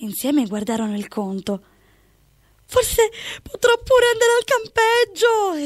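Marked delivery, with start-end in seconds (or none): 2.7-5.6 exclaiming aloud at a very high pitch. Looking over the bill with someone, a character is exclaiming. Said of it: "esclamò Daniele".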